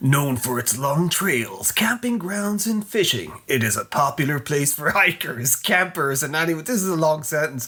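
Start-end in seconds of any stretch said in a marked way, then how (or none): 0.0-6.7 B-movie trailer narrator voice. Reading a B-movie synopsis aloud, in a movie trailer voice. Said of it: "I'm going to try and do it in a a trailer voice".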